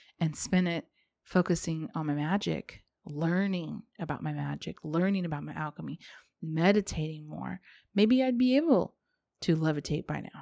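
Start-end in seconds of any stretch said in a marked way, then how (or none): 7.9-10.4 laughing through the words, can't keep a straight face. Joking about a far-fetched result of practising magic, can't keep a straight face. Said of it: "I couldn't even keep a straight face".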